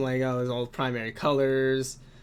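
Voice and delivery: ordinary delivery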